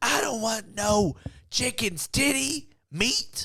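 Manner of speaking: high, frantic, furious outburst. Retelling a woman's reply when offered chicken breast, imitating a frantic, furious woman. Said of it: "very frantic and furious, and she goes".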